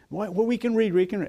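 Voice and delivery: eager, pitched high.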